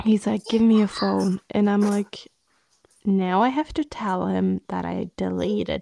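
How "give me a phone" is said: mock-angry, upset, louder. Retelling how he woke you at night and demanded the phone, mock-angry demand. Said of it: "he was like super upset and angry with me".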